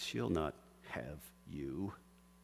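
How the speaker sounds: low, hushed, soft hiss. Narrator reading a story aloud, voicing Satan's line, in a hissing Satan voice. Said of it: "Satan hisses".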